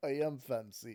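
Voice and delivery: put-on fake Russian accent. Retelling a schoolmate's reply to a friend, imitating fake russian accent. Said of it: "putting on a fake fucking accent".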